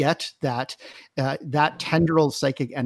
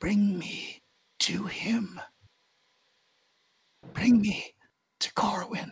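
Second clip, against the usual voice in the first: strained, high, faint effortful whisper; 7 semitones higher, 5 dB quieter than usual. Narrating the scene, the speaker voices a fading man's words to the players in a strained whisper. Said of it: "in a strained whisper".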